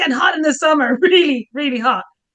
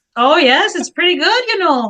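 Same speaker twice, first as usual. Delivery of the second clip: put-on Minnesota accent. Answering a question about minnesota weather in a put-on minnesota accent. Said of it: "I'm even trying an accent now".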